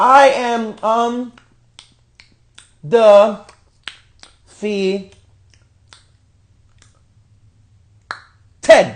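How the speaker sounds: grating, clumsy, very slow, halting, drawn-out delivery. Retelling how a wrestler said she is undefeated: imitating an awkward, annoying delivery. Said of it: "she says it in the most awkward and annoying way".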